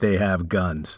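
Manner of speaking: dead serious, grave tone. Retelling a father's warning about dating cops: imitating dad, dead serious. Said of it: "dead serious".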